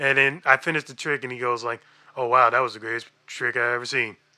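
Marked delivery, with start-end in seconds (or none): 2.2-4.1 low, flat, dead-level monotone on one note. Quoting a man's reaction after finishing a trick, flat monotone. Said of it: "Like, all monotone and shit".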